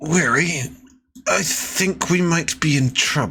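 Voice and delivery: strained voice pushed out through gritted teeth. The game master voices Zadocus speaking to Weary through gritted teeth. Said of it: "He says through gritted teeth".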